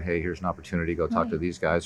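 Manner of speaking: ordinary delivery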